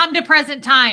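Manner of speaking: stern, very loud, high commanding supervisor voice. Retelling how the speaker's auditor or supervisor commanded them, imitating a commanding voice. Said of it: "They would command it like that".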